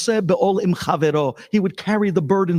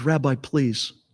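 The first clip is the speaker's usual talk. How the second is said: put-on tearful crying, lower and quieter; 4 semitones lower, 5 dB quieter than usual. Retelling a phone call from a widow: imitating someone crying. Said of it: "she's crying".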